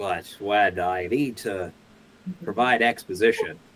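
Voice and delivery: smooth on-air radio-narrator delivery. Showing how you talk when providing exposition, NPR narrator voice. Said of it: "like an N P R narrator".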